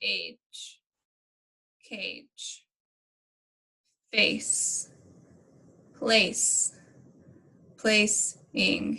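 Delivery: mechanical robotic speech, very slow. Modelling word reading for students, in slow robot talk. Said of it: "you say it really slow like a robot".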